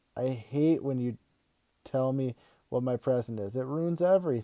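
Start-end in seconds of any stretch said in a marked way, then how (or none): none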